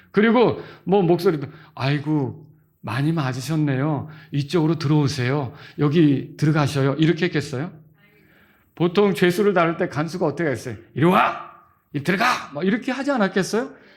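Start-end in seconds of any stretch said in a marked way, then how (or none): 10.9-12.2 put-on sharp, harsh, severe prison guard voice. Acting out a prison guard ordering prisoners: mock-harsh sharp voice. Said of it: "굉장히 그 날카로운 음성으로 이렇게 했었을".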